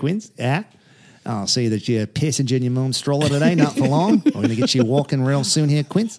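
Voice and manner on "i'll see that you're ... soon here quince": put-on Australian gym coach accent. Playing an australian gym trainer talking to a baby: australian trainer voice. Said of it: "a trainer is a Australian guy".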